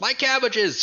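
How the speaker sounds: high, loud anime-style yell, cartoonish wailing.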